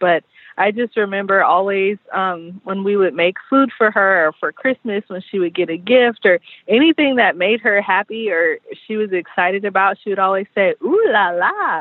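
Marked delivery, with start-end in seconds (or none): 10.8-11.8 put-on Panamanian-accented speech. Retelling what a grandmother says when excited: imitating a grandmother's Panamanian accent. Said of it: "she would say it in her cute Panamanian accent".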